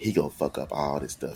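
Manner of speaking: soft, hushed half-whisper. Retelling what a trainer half-whispered to another lady: imitating a half-whisper. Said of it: "whispered to this lady".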